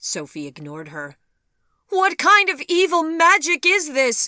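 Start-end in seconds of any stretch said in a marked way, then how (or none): 1.9-4.3 shrill, very loud, very high outcry at full voice. Sophie ignores the other woman's remark, crying out. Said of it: "she cried".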